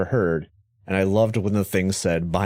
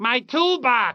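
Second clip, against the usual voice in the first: put-on Staten Island accent. Quoting a character concerned about his toolbox, Staten Island accent. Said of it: "because of his accent".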